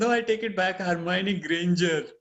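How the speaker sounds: plain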